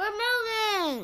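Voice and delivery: talking through a mouthful. Sharing a special announcement with listeners, speaking with mouth full. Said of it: "She has a mouthful".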